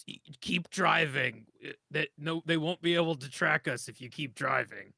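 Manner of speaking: put-on rough, gruff voice. Acting out a scene, the speaker tells the driver to keep going, gruff voice. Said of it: "I say with like a, a gruff voice".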